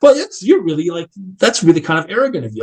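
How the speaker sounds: mock scornful scoffing tone. Retelling an argument about money, the speaker mimics a man scoffing. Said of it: "he started scoffing".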